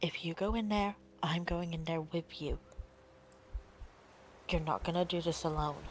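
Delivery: soft whispering. Voicing a character who gently puts a hand on another's arm: gentle whisper. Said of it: "very gently puts a hand on your arm and whispers".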